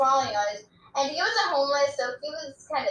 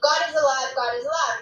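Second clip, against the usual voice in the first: plain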